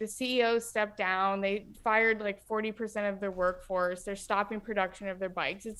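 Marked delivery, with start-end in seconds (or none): none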